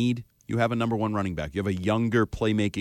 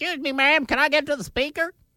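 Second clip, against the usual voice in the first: put-on very high-pitched Southern old man voice. Mimicking the other speaker's bit, asking to reach the speaker: imitating a southern old man voice. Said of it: "You're a Southern old man".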